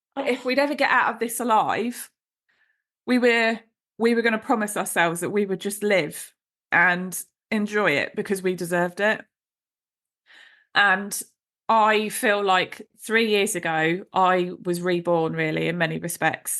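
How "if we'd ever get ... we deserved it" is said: choking up, tearful, voice breaking on every word. Speaker recalls a promise made three years ago, crying while speaking. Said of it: "I'm going to get upset".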